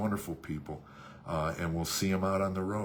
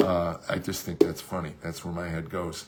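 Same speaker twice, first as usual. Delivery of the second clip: ordinary delivery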